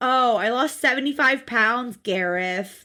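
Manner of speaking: dry, sarcastic tone. Retelling a woman's answer to a man who phoned her, imitating a sarcastic reply. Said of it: "Like sarcastically".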